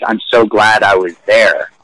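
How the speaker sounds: ordinary talk, nothing marked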